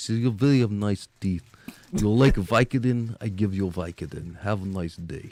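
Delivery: put-on Russian accent with broken English. Retelling what the speaker's Russian dentist told him, Russian accent impression. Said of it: "You talk like this. ... my dentist was Russian".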